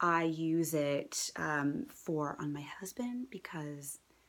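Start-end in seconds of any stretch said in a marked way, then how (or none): 1.9-4.0 quiet hushed whisper. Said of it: "he's home, so I'm gonna whisper".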